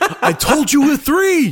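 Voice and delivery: drawn-out, slow shout at very high pitch. Retelling a movie scene where a robber yells at the Joker: imitating a yell. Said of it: "He yells at the Joker".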